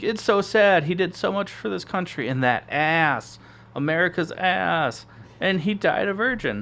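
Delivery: high, slurred, put-on sloppy-drunk crying. Retelling a scene where she acts sloppy drunk, imitating fake drunk crying. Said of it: "like acting like she's sloppy drunk".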